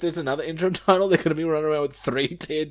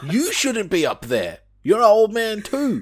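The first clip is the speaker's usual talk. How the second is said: mock screaming, high and loud; 5 semitones higher, 5 dB louder than usual. Retelling watching a match, imitating screaming at the TV. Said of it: "screaming at my T V".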